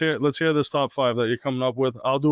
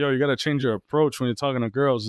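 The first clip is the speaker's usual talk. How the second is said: ordinary delivery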